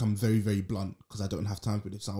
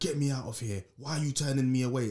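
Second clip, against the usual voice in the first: mock upset, fed-up, protesting shout; 4 semitones higher than usual. Retelling how an elderly patient shouted at them: imitating a patient shouting. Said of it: "He was shouting at me like".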